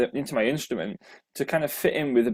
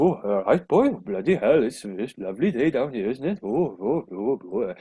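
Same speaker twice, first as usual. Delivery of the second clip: put-on Welsh accent. A Yorkshire speaker showing how people in Wales talk, put-on Welsh accent. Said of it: "So that's kind of how the Welsh speak".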